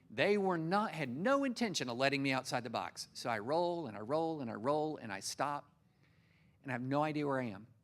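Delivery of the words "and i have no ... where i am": normal talking voice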